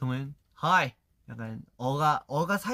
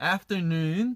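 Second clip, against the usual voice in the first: "afternoon" in an Australian accent; 4 semitones higher than usual. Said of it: "저희는 afternoon이라 하는데".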